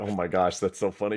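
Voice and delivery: ordinary talk, nothing marked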